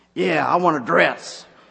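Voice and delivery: gruff, loud, rough-edged voice. Retelling a story, the speaker voices the homeless woman answering the saleswoman in a gruff voice. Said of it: "said in a gruff voice".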